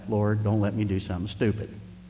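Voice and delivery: muttered under the breath. Retelling lifting a crossbow and praying, saying it under the breath. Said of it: "I said under my breath".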